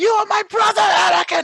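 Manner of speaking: very high-pitched, loud, frantic scream. Retelling a frantic fight scene line: imitating someone screaming. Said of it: "Like I'm saying, screaming".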